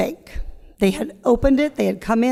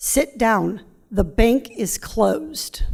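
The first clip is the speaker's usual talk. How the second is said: acted grave, dead-serious, slow, very serious voice. Retelling a bus driver ordering the kids to sit down, imitating a very serious voice. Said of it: "in a very serious voice".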